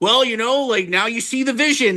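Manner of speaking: put-on gloating voice. Mocking a team executive's victory lap: gloating Nico Harrison impression. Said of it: "taking his stupid victory lap. It, it makes me so mad, going like".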